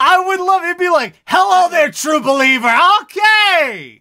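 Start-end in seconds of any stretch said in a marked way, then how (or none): 1.2-3.7 final word "okay" drawn out long. Imagining being haunted by Stan Lee: Stan Lee impression. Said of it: "I would love to be haunted by Stan Lee".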